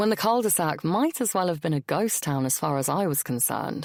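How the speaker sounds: plain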